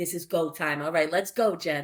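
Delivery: normal talking voice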